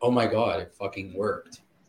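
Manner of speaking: put-on stunned, shocked, disbelieving exclamation. Retelling the moment something blew up in the oven, retelling shocked disbelief. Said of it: "I was so shocked".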